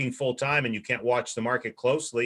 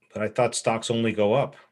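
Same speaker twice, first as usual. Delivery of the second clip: usual speaking voice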